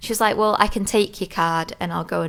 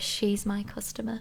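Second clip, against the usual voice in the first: really weird, strange, off-kilter delivery; 3 semitones higher, 9 dB quieter than usual. Retelling what a beautician said to a coworker: imitating a really weird tone. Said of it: "in, like, a really weird way".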